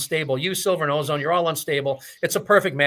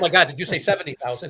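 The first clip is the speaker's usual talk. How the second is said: usual speaking voice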